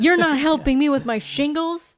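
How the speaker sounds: put-on angry yelling. Acting out a patient scolding doctors for playing golf: imitating someone yelling. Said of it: "it almost sounds like he's gonna yell at them".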